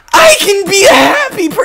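obnoxious put-on voice. Told they're not enthusiastic enough this episode, a co-host answers in an obnoxious voice. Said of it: "That's a really obnoxious voice".

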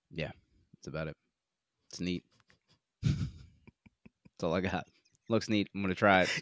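deadpan, flat, quiet, all excitement gone. Summing up a stealth platformer game they plan to try: flat, unenthusiastic. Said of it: "you went back down to".

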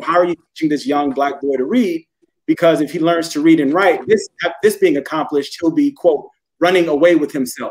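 ordinary delivery

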